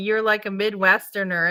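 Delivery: ordinary talk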